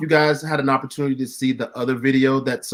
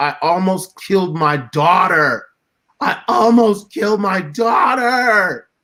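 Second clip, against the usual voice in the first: mock uncontrollable bawling, high-pitched sobbing wail; 6 semitones higher than usual. Retelling how a man broke down on stage at his rally, imitating high-pitched sobbing. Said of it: "Like in a in a high like high pitched voice".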